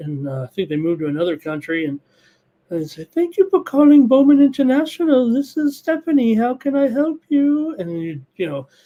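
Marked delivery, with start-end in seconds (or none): 3.1-7.8 put-on very high-voiced English woman's accent. Retelling a bookmaker's phone greeting, in an English woman's accent. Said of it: "accent of the English lady".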